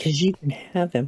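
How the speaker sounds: muttered under the breath. Voicing a character answering the spirit, muttered under her breath. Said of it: "Under her breath".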